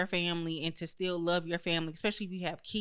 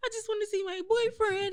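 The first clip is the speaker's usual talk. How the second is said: mock crying, pitched higher. Retelling a college friend's phone call about her boyfriend: imitating a friend crying. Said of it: "she would just be on the phone with me crying".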